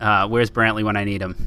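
ordinary delivery

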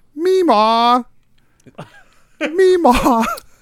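very high-pitched pretend cat call, "meemaw". Retelling how a daughter makes a cat noise: imitating a child's cat noise. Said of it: "my daughter makes animal noises sometimes".

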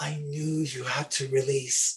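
put-on whispering. Retelling what Mom whispered into the ear: imitating a whisper. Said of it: "she whispers into my ear".

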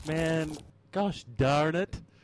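slight hint of an American accent. After finding a dead end, the player reacts in a slightly american accent. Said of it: "I went slightly American".

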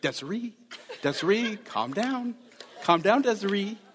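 high-pitched calming voice. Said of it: "he's like".

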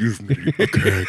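fake possessed-sounding voice. Pointing out Dana's Zool voice matches Teen Wolf's; Teen Wolf voice. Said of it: "Teen Wolf's voice when he asks for beer".

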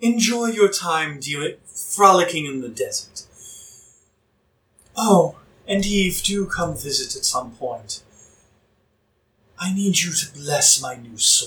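delivered like a public address broadcast. From a passing dirigible, the overlord villain calls down to Eve; Alistair over the loudspeakers. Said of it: "You're talking up at a dirigible he cannot hear. / You hear over the loudspeakers a voice".

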